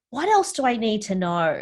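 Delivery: ordinary talk, nothing marked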